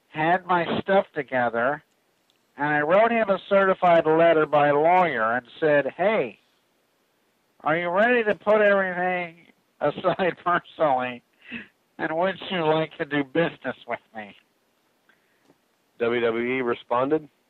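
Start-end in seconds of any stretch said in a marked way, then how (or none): 0.2-14.4 put-on nasal voice, as if holding the nose. Reading out a wrestler's letter as asked: Chyna voice, holding nose. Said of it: "You do kinda sound like her".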